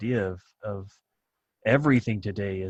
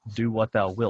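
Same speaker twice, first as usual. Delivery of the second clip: ordinary delivery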